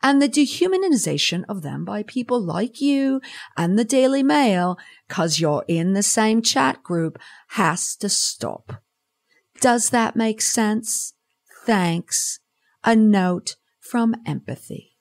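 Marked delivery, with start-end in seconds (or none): 0.0-12.4 bad put-on English accent, pitched higher. Delivering a signed note to the listener, in a bad English accent. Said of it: "Bad English accent aside".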